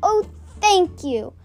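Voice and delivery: joyful. Reading a children's book aloud, voicing a character who replies to two girls happily. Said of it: "Ruby said happily".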